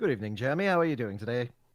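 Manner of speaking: put-on British accent. Put on the spot by a friend to give an accent reference: british accent. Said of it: "Give me a British accent".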